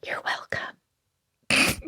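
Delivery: whispering. Player voicing their character to the ally they just stabilized, whispered. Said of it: "And I whisper".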